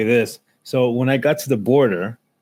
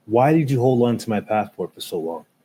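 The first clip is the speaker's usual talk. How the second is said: put-on angry tone. Retelling a question to the guy who held the passport: imitating own angry question. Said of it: "I was so pissed".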